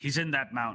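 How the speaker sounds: gruff, rough dwarf voice. Game master narrating a voice heard while fading away: gruff dwarven voice. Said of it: "you hear a much more gruff dwarven vo- voice go".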